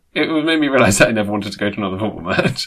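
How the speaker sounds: ordinary delivery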